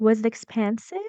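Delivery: pitch rising through the word "expensive". Demonstrating intonation, the speaker asks the question with rising pitch on expensive.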